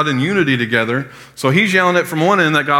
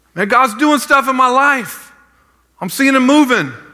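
very high-pitched, yelled-out delivery; 9 semitones higher than usual. Acting out a youth calling from one end of the line: imitating Walker yelling. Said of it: "Walker's still yelling out".

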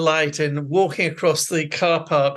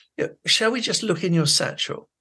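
gentle, endlessly patient, kind coaxing voice; 2 semitones higher than usual. Retelling a teacher's words to a pupil: imitating a patient, kind teacher. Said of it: "In a very patient, kind way".

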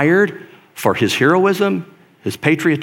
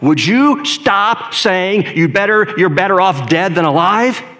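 put-on raised voice, much higher, slower; 5 semitones higher than usual. Retelling a woman overheard on a flight, speaking up even louder. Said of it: "she speaks up even louder".

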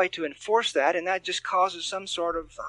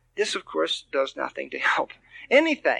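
ordinary talk

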